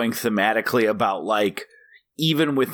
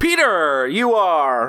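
pitched-up, welcoming radio DJ voice; 6 semitones higher, 4 dB louder than usual. Speaker shows the other host how they welcome people back after a break, radio host welcome-back voice. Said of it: "welcoming people back from a commercial break on the radio".

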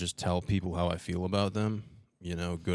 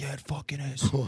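higher, acted-out male scream; 8 semitones higher than usual. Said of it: "this old guy's screaming at me".

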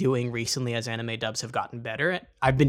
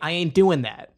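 rough, laid-on Brooklyn accent, pitched up; 5 semitones higher, 4 dB louder than usual. Explaining a dubbed character, the speaker imitates how Joey talks; rough Brooklyn-accented Joey voice. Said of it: "So he kind of talks like".

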